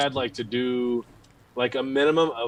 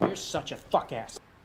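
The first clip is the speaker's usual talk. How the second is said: breathy, hushed, hostile jabbing tone; 2 semitones higher, 8 dB quieter than usual. Repeating the movie line when asked: Jake Gyllenhaal impression. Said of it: "That's Jake Gyllenhaal".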